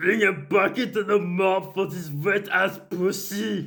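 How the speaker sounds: high-pitched put-on Austrian accent. Doing the promised celebrity impression: Arnold Schwarzenegger impression. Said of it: "I'll do Arnold Schwarzenegger".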